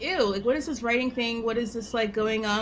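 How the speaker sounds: plain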